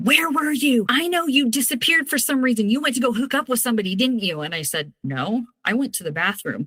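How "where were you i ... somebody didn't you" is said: loud, pitched-up shouting. Speaker retells a man confronting them in a parking lot, retelling someone yelling. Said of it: "immediately he starts yelling in the parking lot".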